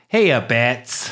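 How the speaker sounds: synthesized, artificial-sounding put-on voice. Describing Batman's new voice synthesizer, the speaker does a Harley Quinn impression. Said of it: "So Batman can do a Harley Quinn impression".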